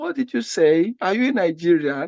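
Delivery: ordinary delivery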